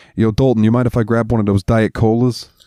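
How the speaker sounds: put-on thick, heavy New York accent. Telling a story, voicing a man in it, thick New York accent. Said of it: "he's got a real thick fucking New York accent".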